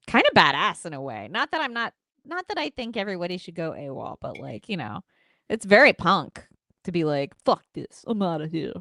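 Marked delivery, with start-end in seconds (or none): 7.4-8.7 made-up low, tough-guy wrestler voice. Acting out someone quitting, Randy Orton impression. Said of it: "That's my Randy Orton impression based on nothing".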